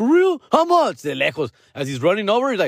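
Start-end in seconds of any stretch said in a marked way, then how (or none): 0.0-1.0 very high, eager, excited burst. Retelling a man running back after being offered one for sale: acting out excitement. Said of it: "He got all excited".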